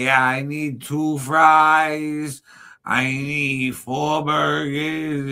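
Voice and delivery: mock slow, slurred drunk voice, "fries" drawn out. Describing how people really talk, the speaker imitates a drunk person. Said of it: "somebody's drunk as shit and be like".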